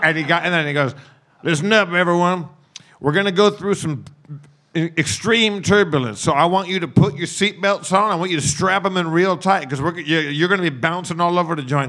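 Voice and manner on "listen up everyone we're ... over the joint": drawling cartoon cowboy voice. Retelling the pilot's announcement to the passengers, in a Yosemite Sam voice. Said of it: "he sounded like Yosemite Sam".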